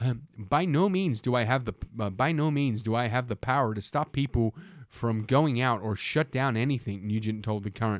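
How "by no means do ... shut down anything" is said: plain put-on American accent. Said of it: "I'll give him an American accent".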